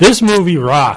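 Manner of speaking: loud yell. Giving a Star Trek movie review on Facebook, yelling into the mic. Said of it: "I'm yelling into my mic".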